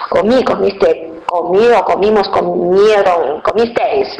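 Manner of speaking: ordinary talk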